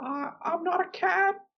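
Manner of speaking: very high, trembling, shaky quaver. You are retelling how a confused man spoke on a Zoom meeting, imitating his shaking voice. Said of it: "He was like shaking his voice".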